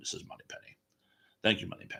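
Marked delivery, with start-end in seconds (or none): 0.0-0.8 quieter, poor put-on Scottish actor voice. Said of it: "I do a very poor Connery too".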